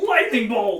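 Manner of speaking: high, loud yelling.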